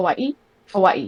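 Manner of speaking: put-on local Hawaiian pronunciation of "Hawaii". Speaker shows how a woman with a Hawaii accent says it, imitating Hawaiian pronunciation. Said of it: "She says it like that".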